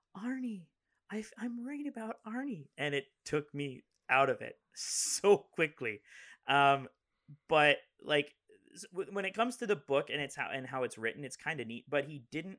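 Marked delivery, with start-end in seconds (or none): 0.1-2.6 put-on, weird, very high woman's voice. Complaining about an audiobook narrator, mimicking how he does Lee's weird voice. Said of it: "like when he does Lee's voice, he goes".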